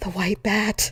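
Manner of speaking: hushed whisper. Retelling what she said on waking the next morning, whispered. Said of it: "I whispered out loud".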